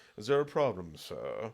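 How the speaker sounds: unbothered, nonchalant, polite butler voice. Retelling a comic book scene, quoting a character's reply, in an Alfred voice. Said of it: "all I heard is the voice of Alfred".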